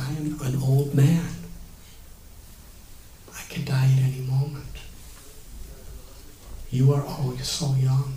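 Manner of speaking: faltering, choked-up voice. Recounting what an old man said to his devotees, retelling a faltering voice. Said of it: "With a faltering voice".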